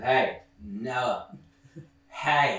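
put-on rude drunken voice. Retelling a film scene where a drunk character butts in: imitating a rude interruption. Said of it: "rudely interrupts and goes".

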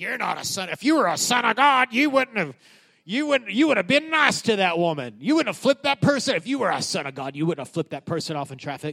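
put-on accusing tone. Acting out how the devil talks to listeners, mock-accusing voice. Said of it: "That's an accusing voice".

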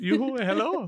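fake Nordic yoo-hoo voice. Speaker demonstrates the accent just used in retelling a story, mock Nordic accent. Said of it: "it was a Nordic yoo-hoo".

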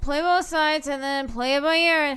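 high, whiny, griping put-on voice.

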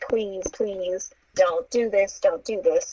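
tearful, crying, pleading voice. Retelling a woman with her hands up begging a man; imitating someone crying and pleading. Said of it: "she's crying and she's like".

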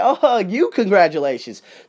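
mocking, sarcastic tone. Speaker acts out what he'll say to people who snubbed him, mocking congratulations. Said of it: "I'm just going to mock the hell out of them".

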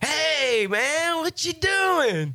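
bright, cheery, jolly, very high voice. Retelling walking into a church, the speaker voices the man he heard: retelling a jolly voice. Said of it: "I hear this good old jolly voice".

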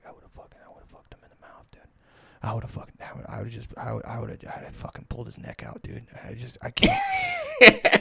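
put-on mutter under breath. Retelling what a friend muttered while walking home: imitating muttering under his breath. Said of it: "I hear him under his breath".

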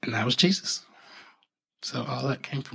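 moved, emotional, breathy, almost whispered voice. Retelling the birth of jesus, getting emotional. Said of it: "it's making me emotional".

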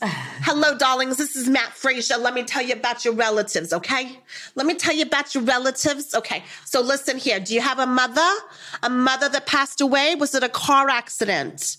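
thick, put-on New Jersey Italian accent. Retelling a psychic's TikTok live greeting: Matt Frazier's thick Jersey Italian accent. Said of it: "the thickest, most incredible Jersey accent, Italian accent".

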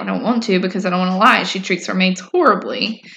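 ordinary delivery

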